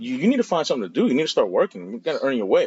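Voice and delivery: high-pitched, fast scolding like a lecture.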